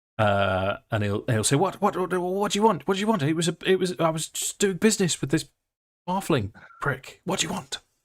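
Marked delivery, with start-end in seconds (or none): 1.6-7.8 frightened little creature voice, much higher, faster. Game master voicing a small creature confronted by the party, frightened little creature. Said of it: "and he's he's frightened".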